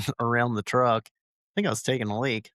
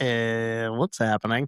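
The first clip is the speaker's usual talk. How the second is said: usual speaking voice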